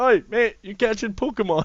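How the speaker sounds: very loud, very high-pitched shout. Acting out calling up to a man behind a wall: imitating a shout up. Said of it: "I never shouted up and went".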